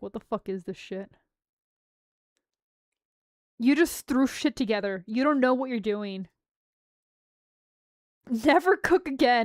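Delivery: acted upset ranting. Retelling the reaction to tasting disappointing Mexican food, imitating an upset rant. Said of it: "I was so upset".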